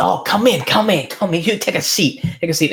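put-on very high, effusive, hospitable voice. Voicing a craftsman inviting the visitor in: smiling big as he speaks. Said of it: "he smiles really big".

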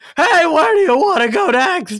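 very loud, shrill, high-pitched screaming. Retelling calling out to the group while blown back by wind, retelling own screaming. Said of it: "I'm like screaming".

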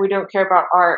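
plain

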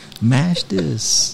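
whispered voice. Retelling urging a friend at a meal: retelling a whisper. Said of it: "I had to whisper to him".

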